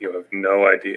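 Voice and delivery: soft, weary, very tired, worn-out voice. Player character answering another character in the game, very tired voice. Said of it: "respond back in a very tired voice".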